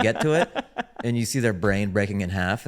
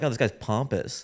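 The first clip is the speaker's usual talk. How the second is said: ordinary talk, nothing marked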